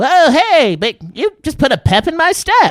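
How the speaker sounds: very high, very loud, swooping, drawn-out cartoon voice. Retelling meeting SpongeBob's voice actor on a hike: SpongeBob voice. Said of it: "did the SpongeBob".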